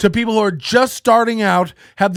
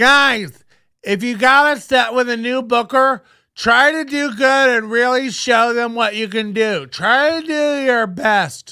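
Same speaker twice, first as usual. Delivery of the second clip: mocking voice; 2 semitones higher than usual. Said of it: "Imagine feeling the need to get this info".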